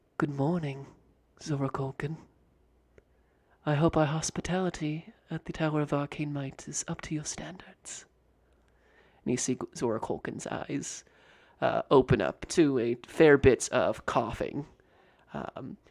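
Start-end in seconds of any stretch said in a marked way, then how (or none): 0.2-8.1 soft, very quiet, hushed voice. Narrating a game scene, a man caps a vial and greets Zora Colkin, very quietly. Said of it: "very quietly says".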